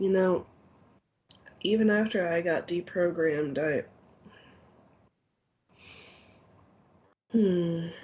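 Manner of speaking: distracted voice drifting off, fading mid-sentence. Narrating a game, a player speaks as their character, trailing off. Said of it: "And he just kind of trails off".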